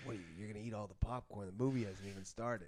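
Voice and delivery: quiet, hushed stage whisper kept low, under the breath. Retelling a remark to a date at the movies: imitating a half-whisper. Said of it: "I whispered".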